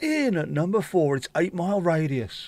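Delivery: corny chart-show presenter voice. Showing how a radio chart countdown would sound: radio DJ voice. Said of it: "could I do a D J voice".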